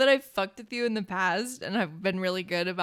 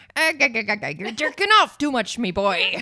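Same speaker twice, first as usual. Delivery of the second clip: put-on old sailor voice, higher and louder; 3 semitones higher, 7 dB louder than usual. Acting out the lighthouse keeper's lines: Mister Krabs impression. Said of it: "Mister Krabs impression".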